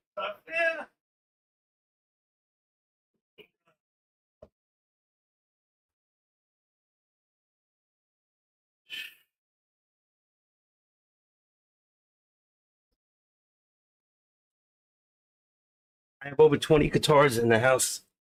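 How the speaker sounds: crying while talking, tearful. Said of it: "I'm crying".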